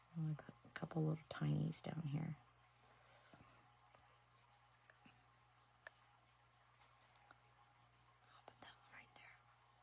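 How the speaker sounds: very quiet, barely-there whisper, muttered to self. Placing little tiny details on an intricate art piece, whispering. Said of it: "Now I'm whispering again".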